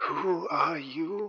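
feeble, frail voice. After a long pause, a voice answers in the listeners' heads, weak voice. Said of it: "a weak voice responds in your head".

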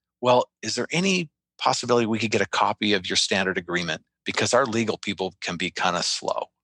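secretive, confidential, on-the-sly tone. Retelling what a guy quietly asked him: retelling a lowered voice. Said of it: "He kind of lowers his voice".

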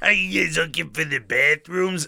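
eerie, unsettling voice. Retelling what a gas station lady asked: imitating the lady's voice. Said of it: "she sounded like that, too".

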